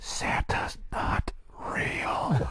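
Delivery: soft, hushed whisper under the breath. Kids might be pretty close by, so saying this whispered. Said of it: "I'm going to kind of whisper this".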